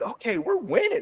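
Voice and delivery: put-on very high, smug, pleased child voice. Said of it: "I'm like".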